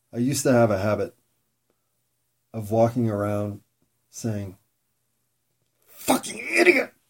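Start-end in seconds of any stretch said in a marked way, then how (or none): 5.8-6.8 acted anguish, very high and rough. Speaker recalls a habit of cursing over their own mistakes, mock angst-filled self-scolding. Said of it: "I just had to do the voice to convey the angst".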